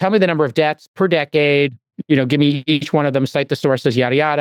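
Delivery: ordinary talk, nothing marked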